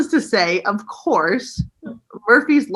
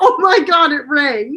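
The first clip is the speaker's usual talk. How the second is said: put-on terrified voice, higher and louder; 6 semitones higher, 5 dB louder than usual. Retelling handing a ringing phone to mom: imitating own petrified voice. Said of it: "I'm just so petrified".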